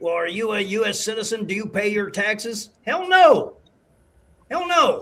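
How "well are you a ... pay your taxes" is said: mock condescending tone, quieter. Retelling how people ask about citizenship: imitating a condescending tone. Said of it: "they condescendingly say".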